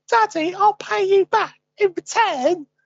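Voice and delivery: put-on very high, loud full East London Cockney accent. Retelling what his son said to him, in a cockney accent. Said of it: "using the whole Eastern Cockney accent".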